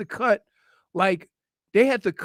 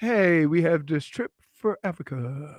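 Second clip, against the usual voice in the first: put-on slow auctioneer voice, lower; 4 semitones lower than usual. Telling a story about the auctioneer at a family gala: imitating a slow-talking auctioneer. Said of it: "didn't speak fast".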